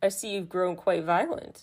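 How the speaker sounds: ordinary talk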